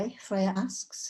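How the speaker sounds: ordinary delivery, nothing marked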